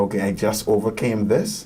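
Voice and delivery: ordinary delivery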